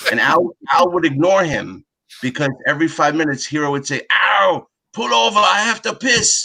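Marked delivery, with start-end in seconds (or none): 4.1-6.5 put-on high, very slow, drawn-out broken Japanese accent. Retelling a road trip, quoting Hero to the driver, in Hero's broken Japanese accent. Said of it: "in his j- broken Japanese accent".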